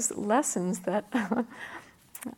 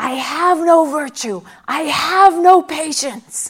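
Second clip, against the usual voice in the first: put-on very loud, shrill, drawn-out child-like howling scream; 6 semitones higher, 15 dB louder than usual. Retelling a young boy's outburst in a doctor's waiting room: imitating a child screaming. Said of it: "he just screamed out".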